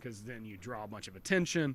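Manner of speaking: ordinary talk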